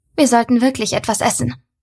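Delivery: plain reading voice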